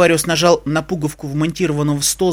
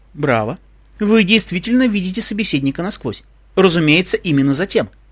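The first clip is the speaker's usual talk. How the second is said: ordinary delivery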